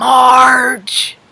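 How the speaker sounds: play-acted nasty, sneering, drawn-out voice. Recalling how people said her name her whole life: mock-nasty Marge. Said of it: "People say it with this nasty Marge!".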